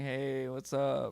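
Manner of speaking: strong California accent. Speaker from California demonstrates the stereotypical local accent: California accent. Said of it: "that really California accent where you're saying".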